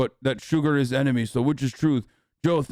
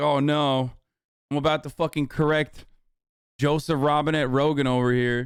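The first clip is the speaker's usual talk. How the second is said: ordinary delivery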